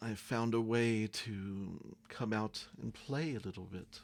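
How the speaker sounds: dragon creature voice. A dragon speaks to you through a man's mouth, dragon's voice. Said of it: "a dragon's voice coming from the man says".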